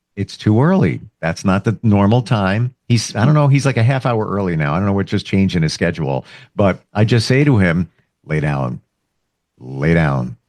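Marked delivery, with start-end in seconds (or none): 8.3-10.3 very low, slow, unhurried voice. Retelling what they say to him when he wants out too early, in a low voice. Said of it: "you're using a lower voice".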